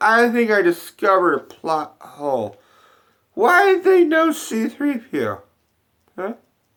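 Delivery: put-on very high, slow, sloppy drunken slur. Recalling watching the film drunk with a friend, doing a drunk impression of himself. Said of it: "That's my drunk impression of me".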